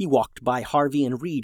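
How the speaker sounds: ordinary delivery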